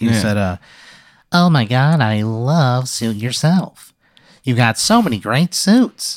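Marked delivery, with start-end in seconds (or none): 1.3-6.2 very nasal, slow male voice. Retelling what a man who came up to you said, in a very nasally voice. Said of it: "He had a very nasally voice".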